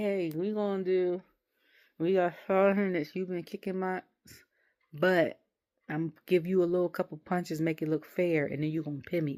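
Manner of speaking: plain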